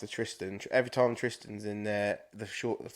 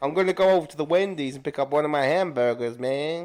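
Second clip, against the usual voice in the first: loud, put-on American accent; 6 semitones higher, 7 dB louder than usual. Asked by another speaker to say a full sentence, doing an american accent. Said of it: "Do American accent".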